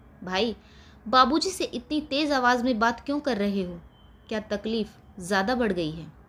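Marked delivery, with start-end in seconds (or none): none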